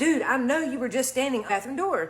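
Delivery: ordinary delivery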